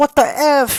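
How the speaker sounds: shrill, very high, loud braying yell. Describing a boy yelling in a store in videos, imitating Donkey yelling. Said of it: "he would just start yelling like on stupid ass donkey".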